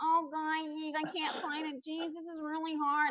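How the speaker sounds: high, slow voice pushed through the nose. Retelling a contestant struggling in a competition: nasal Nicole F voice. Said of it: "freaking Nicole F's nasal".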